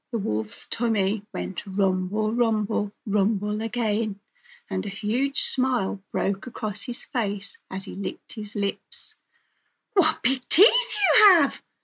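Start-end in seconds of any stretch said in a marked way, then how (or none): 9.9-11.5 very high, loud gasp with swooping pitch. Reading a fairy tale, the girl speaks to the wolf, gasped.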